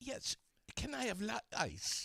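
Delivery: put-on very high, prim voice with British accent. Retelling how Sherilyn orders at a drive-thru: imitating Sherilyn's British accent. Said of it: "the British accent".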